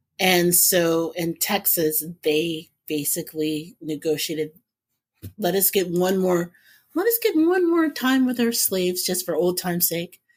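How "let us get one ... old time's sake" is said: ordinary talk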